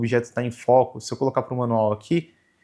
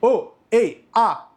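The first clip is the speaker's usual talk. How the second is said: loud, high-pitched shout. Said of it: "vou gritar aqui".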